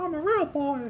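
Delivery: very high, squeaky cartoon mouse voice. Joking about almost being a real adult, in a Mickey Mouse voice. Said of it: "It's my Mickey Mouse voice".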